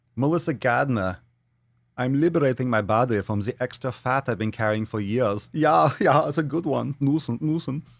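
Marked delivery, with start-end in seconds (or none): 2.0-5.5 put-on, flamboyant German accent.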